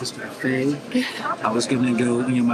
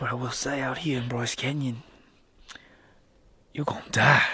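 put-on Australian accent; 5 dB quieter than usual. Doing a Bear Grylls bit for the group: Bear Grylls impression, Aussie accent. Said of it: "I have an Aussie accent now".

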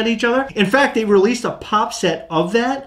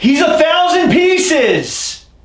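shouting, much higher in pitch; 8 semitones higher, 5 dB louder than usual. Speaking to someone two feet away about a limited figure, shouting. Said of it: "You don't have to shout".

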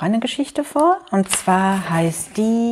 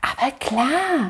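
quick, hurried whisper. He answers the fattest pig's question about the sandbox; quick whisper. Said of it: "flüsterte Jo schnell".

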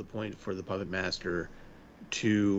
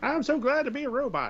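put-on Texas accent in a very high-pitched voice; 4 dB louder than usual. Quoting a brain-in-a-box character's line, in a Texas accent. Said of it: "with a Texas accent".

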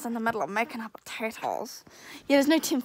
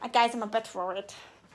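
ordinary delivery

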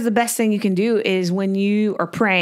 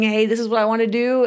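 ordinary talk

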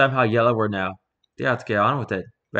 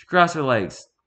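plain reading voice

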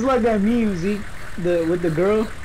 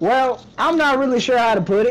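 put-on rural country accent; 4 semitones higher than usual. Asked to do the country voice, the speaker delivers a line in a put-on country accent. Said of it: "can I do the country voice?".

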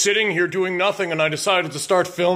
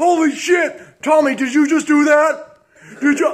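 frightened, higher and louder; 9 semitones higher, 4 dB louder than usual. Asking tommy if he caused the ghostly events: scared. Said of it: "I'm so scared right now".

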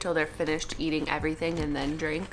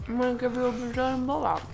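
speaking with mouth full, higher pitch; 8 semitones higher than usual. Eating on the floor, telling the other speaker tonight's plan; talking with mouth full. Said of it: "forgive us for talking with our mouths full".

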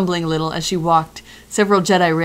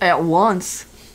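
put-on odd Southern accent. Voicing the Jedi character's reply in a story, weird southerny accent. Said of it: "It's kind of like my weird southerny accent".

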